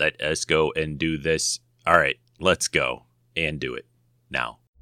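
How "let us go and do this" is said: robotic voice, much slower. Starting the presentation of the annual winners, robot voice. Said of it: "I don't know why I'm talking like a robot".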